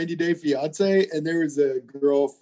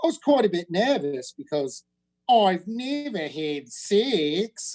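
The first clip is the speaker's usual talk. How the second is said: put-on slow, unhurried Australian accent; 4 dB quieter than usual. Retelling what a woman said in her talking-head clip: australian accent. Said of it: "so she had an Australian accent".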